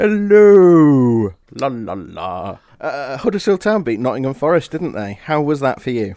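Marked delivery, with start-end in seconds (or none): 0.0-2.6 loud, swooping novelty voice, stretched out. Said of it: "doing the, the Seinfeld belly button voice".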